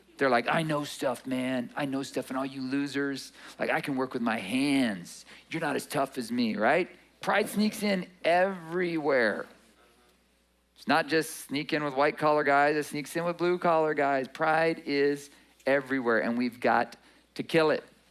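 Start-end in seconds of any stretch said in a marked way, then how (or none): 0.5-6.6 mock arrogant, boastful voice. Imitating blue-collar workers who listen to podcasts: imitating arrogant workers. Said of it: "some of the most arrogant people I've met are blue-collar workers".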